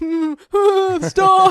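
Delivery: play-acted very high, very loud, shrill stifled squealing laugh. Retelling how a daughter reacted who was not supposed to laugh: imitating someone holding back laughter. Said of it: "she didn't wanna laugh hard".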